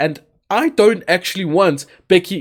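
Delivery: voice breaking mid-phrase. Speaker discussing Becky Lynch and WrestleMania, voice cracking. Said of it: "This this has got me voice cracking".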